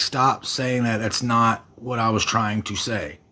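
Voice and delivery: ordinary talk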